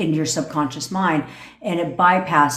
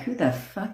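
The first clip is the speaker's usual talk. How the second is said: angry, frustrated, fed-up outburst; 3 semitones higher, 7 dB quieter than usual. Acting out a parent whose kid keeps ignoring them: imitating an angry parent. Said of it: "When your kid pisses you off".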